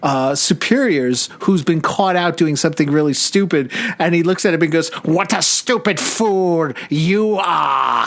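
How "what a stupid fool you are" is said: put-on sneering nasal voice, much slower. Speaker retells a man sneering at a superior: imitating a sneering nasal voice. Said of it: "he does a nasal tonality to his voice... he's sneering".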